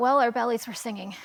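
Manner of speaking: usual speaking voice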